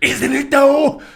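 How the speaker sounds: high comic-book villain voice. Voicing a villain answering a player's remark, in a Joker-like voice. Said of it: "When did he become the Joker?".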